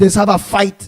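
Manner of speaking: ordinary talk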